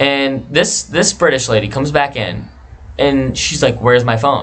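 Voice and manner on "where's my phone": put-on flustered woman's voice. Retelling a woman coming back for her phone: imitating a flustered woman. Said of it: "she's kinda flustered".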